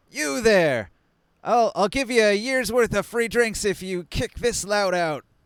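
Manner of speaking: loud, high shouting. In a game scene, a character shouts across the bar at two guys, shouting across a bar. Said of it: "he shouts he shouts across the bar".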